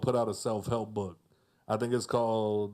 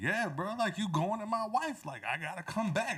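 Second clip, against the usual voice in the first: lively, high, animated voice swooping up and down; 9 semitones higher, 4 dB quieter than usual. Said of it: "he was just like".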